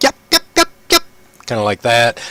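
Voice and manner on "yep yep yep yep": very high yapping of a little dog. Describing noises behind a door, voicing a yippy dog. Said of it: "it's like a yippy dog".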